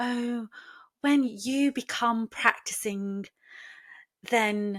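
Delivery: soft, patronizing, very condescending tone. Retelling what a student said to the speaker, in a mock-patronizing tone. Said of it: "in a really really patronizing tone".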